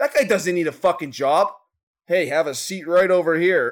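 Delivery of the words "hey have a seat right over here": investigative news reporter's on-air delivery. Quoting a TV show's catchphrase: imitating Chris Hansen. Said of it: "Chris Hansen from".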